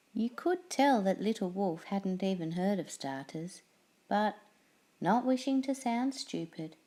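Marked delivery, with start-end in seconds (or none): none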